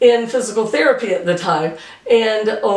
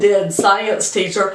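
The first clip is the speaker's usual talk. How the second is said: ordinary talk, nothing marked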